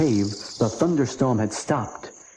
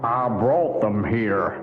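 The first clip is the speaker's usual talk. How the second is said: deep, low growl from deep down; 2 semitones lower than usual. A creature at the back of a dark cave answers the boys, deep growl. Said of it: "growled a deep voice".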